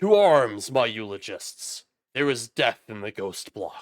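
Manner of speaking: thunderous, booming, very loud announcer-style voice. A narrator voices the projection standing in the flame: booming Enmity Ghost Flame voice. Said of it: "he says out in a booming voice".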